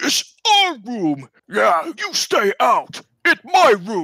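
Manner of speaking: high, loud greedy ogre voice shout. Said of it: "the left head says".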